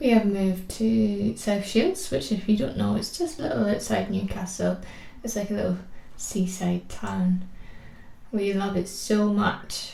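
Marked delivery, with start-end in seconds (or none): 8.3-9.9 slow, sarcastic-sounding drawl. Talking about moving to South Shields, the speaker says this sarcastic-sounding. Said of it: "it that sounded so sarcastic".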